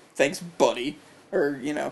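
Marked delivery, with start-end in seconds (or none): 0.1-0.9 sarcastic, mocking tone. Showing how calling someone buddy sounds: sarcastic. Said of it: "it's probably sarcastic".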